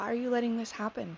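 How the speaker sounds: normal talking voice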